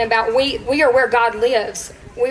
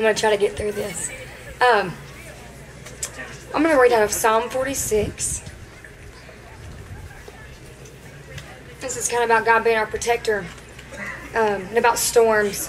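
raspy, worn, very hoarse and soft speaking voice; 5 dB quieter than usual. About to read Psalm 46 aloud to the group, with a very hoarse voice. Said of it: "my voice is very hoarse".

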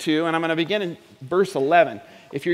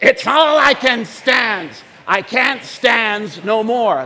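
loud, slow, enthusiastic delivery with gusto; 5 semitones higher, 6 dB louder than usual. Saying the line again with more enthusiasm, in best Popeye voice. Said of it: "in your best Popeye voice".

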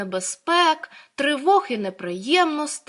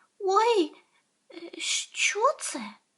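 scared, frightened, breathy, hushed little voice; 8 semitones higher, 6 dB quieter than usual. Narrator reads a hedgehog suddenly turning to ask a rabbit; frightened. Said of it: "злякано спитав".

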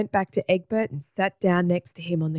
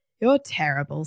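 ordinary delivery

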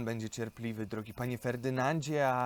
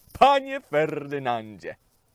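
delighted, very loud, swooping call; 3 semitones higher, 9 dB louder than usual. Pan Dok greets Ferdynand as he steps out from behind the screen, calling out. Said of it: "zawołał".

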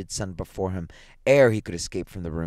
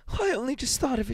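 very high-pitched, hysterical outburst. A woman speaks to the man beside her, hysterical. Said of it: "she said hysterically".

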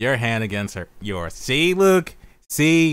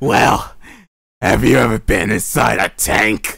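loud, eerie, creepy put-on girl voice; 3 semitones lower, 6 dB louder than usual. Voicing her as she questions the new boy: creepy voice. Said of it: "time to go with a creepy voice for her".

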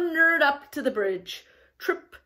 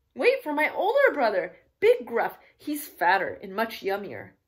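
ordinary delivery

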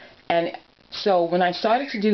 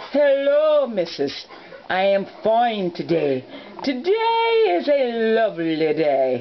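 high, sing-song, swooping toy voice; 5 semitones higher than usual. Showing how to talk with a Littlest Pet Shop toy, answering in Mr. Scotty toy voice. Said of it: "it's you versus him".

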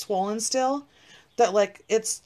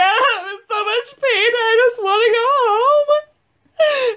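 sobbing, very high pitched and very slow; 14 semitones higher, 8 dB louder than usual. Recounting being in pain before clocking out, retelling own crying. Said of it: "I start crying like that".

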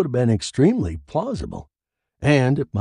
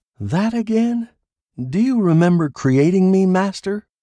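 teasing, mocking tone, pitched up; 9 semitones higher, 4 dB louder than usual. A woman answers a man who doubts she is real; asking mockingly. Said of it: "She asked mockingly".

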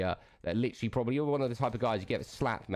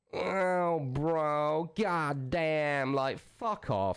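overdone American drawl, very slow and drawn out; 6 semitones higher than usual. Mocking how another streamer talks: mocking exaggerated american accent. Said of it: "what fucking melt says".

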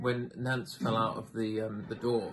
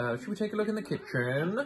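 rising pitch at the end on kitchen; 9 semitones higher than usual. Replaying own earlier line that went up at the end: rising on kitchen. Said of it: "because I went up at the end".

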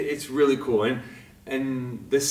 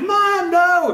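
mock crying child, higher and louder; 9 dB louder than usual. Describing a photo of a child on santa's lap: imitating a crying child.

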